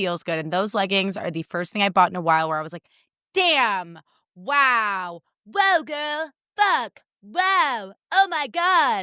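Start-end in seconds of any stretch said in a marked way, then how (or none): 3.3-9.0 high, very slow drawl, "wow" drawn out long. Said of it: "That's a [name] impression".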